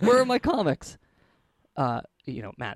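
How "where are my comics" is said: very high, frantic, top-of-lungs shout. Narrating a story and voicing a character: yelling at the top of his lungs. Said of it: "yelling at the top of his lungs".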